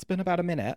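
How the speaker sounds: British accent laid on. Announcing the UK minute segment, repeating it in a British accent. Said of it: "I have to say that actually in a British".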